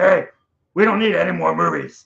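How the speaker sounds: loud, rough, creaky put-on puppet-like voice. Speaker retells filming their flapping wallet, giving it a talking wallet voice. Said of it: "doing this this voice like".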